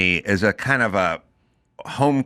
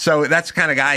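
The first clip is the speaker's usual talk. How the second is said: ordinary delivery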